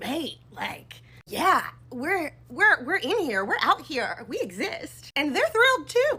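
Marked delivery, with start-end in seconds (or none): 0.0-5.1 slow, casual, put-on Scottish accent. Retelling what people say in online videos: imitating a scottish accent.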